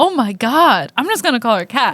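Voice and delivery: ordinary talk, nothing marked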